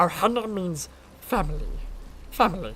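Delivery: little cartoon alien creature voice. Showing off the cartoon voices they can do, the speaker does a Stitch voice. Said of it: "Like that's Stitch".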